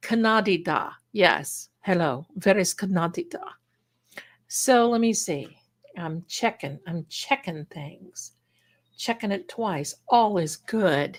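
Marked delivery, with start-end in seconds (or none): 0.0-3.4 put-on thick German accent. Retelling how german relatives said canada: imitating thick german accent. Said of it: "it's that very thick accent".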